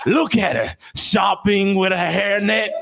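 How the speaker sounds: put-on Australian wildlife-show presenter voice. Joking about catching a cougar: Crocodile Hunter impression. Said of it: "You gotta do the crocodile hunter".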